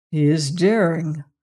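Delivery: said in a mutter. Narrator reading a line spoken by dr. cairn, muttered. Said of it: "muttered Dr. Cairn".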